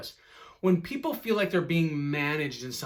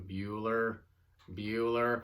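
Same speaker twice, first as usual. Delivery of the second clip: toneless, lower-pitched teacher voice; 5 semitones lower, 4 dB quieter than usual. Quoting the teacher at the front of the room, lifeless monotone. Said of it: "with almost no tone and no life".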